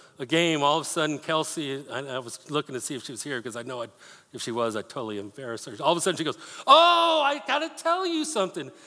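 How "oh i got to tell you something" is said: very high, thrilled, drawn-out, excited sing-song. Retelling how a small group member announced news during a game: imitating Kelsey's excited tone. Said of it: "the way she said, "Oh," you know, like, "Hey, this is exciting."".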